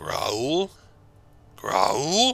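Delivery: ancient, decrepit croaking voice. A game master voices a voice croaking from the gloom, decrepit croaking voice. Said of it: "A decrepit voice croaks from the gloom".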